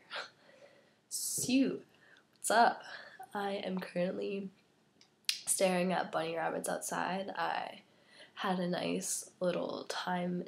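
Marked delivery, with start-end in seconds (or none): 2.4-4.5 whispery, barely voiced, sore-throat sick voice. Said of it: "It kinda hurts to talk".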